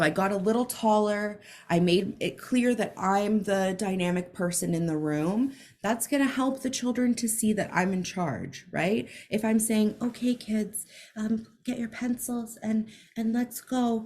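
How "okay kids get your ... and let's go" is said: hesitant, unsure, lacking confidence. Demonstrating a weak way to address the kids, hesitant and unconfident. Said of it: "not going to feel that direct communication".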